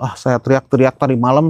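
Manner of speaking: normal talking voice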